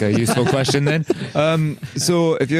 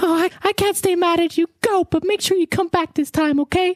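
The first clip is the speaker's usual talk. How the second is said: very high-pitched woman's voice. Acting out a remembered farewell, answering him: imitating her voice. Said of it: "you did her voice so well".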